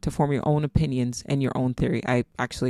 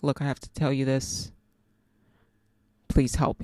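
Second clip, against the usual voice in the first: put-on pleading tone, quieter; 6 dB quieter than usual. Retelling a friend's phone call asking for help: imitating a pleading friend. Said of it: "You can almost hear the pleading in her voice".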